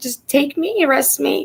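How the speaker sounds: mock, very high, hysterical sobbing through tears. Recalling being too sick to drive him, retelling hysterical crying. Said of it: "I was like hysterical crying".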